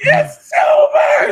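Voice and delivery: very high, loud, anguished scream. Telling how they reacted on seeing it: retelling a scream. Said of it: "I was screaming".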